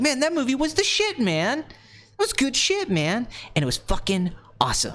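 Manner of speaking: ranty, high gushing voice with big pitch swings. Showing how coming out of a movie sounds: Quentin Tarantino impression. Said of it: "I just turn into Quentin Tarantino".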